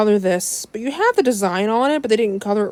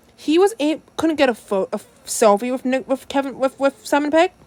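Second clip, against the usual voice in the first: stuttering with stumbling restarts and tangled, tripped-over words; 4 semitones higher than usual. Recounting who got a selfie with whom at a convention, the speaker keeps stuttering. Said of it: "I'm stuttering".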